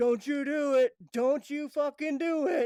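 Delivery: very loud, high, drawn-out scream. Retelling a passenger's protest to the driver: imitating someone screaming. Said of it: "he's screaming".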